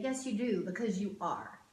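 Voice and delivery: ordinary talk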